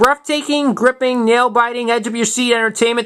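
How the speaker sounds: ordinary talk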